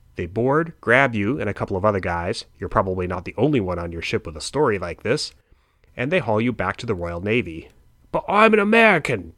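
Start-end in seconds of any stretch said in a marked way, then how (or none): 8.1-9.2 very high, loud, broad Cockney, laid on thick. Narrating a sailor seized for the Royal Navy protesting, in a thick Cockney accent. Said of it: "you protest in your thick Cockney accent".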